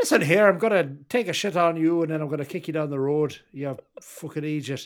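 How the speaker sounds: loud put-on attempt at an Irish accent. Asked where his irish accent is, the speaker shows it off in an irish accent. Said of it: "where's your Irish accent?".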